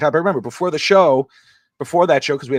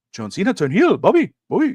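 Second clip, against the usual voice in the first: broken English with a high, swooping voice; 6 semitones higher than usual. Retelling what his father-in-law asked him the next morning, imitating broken english. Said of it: "he's you know broken English".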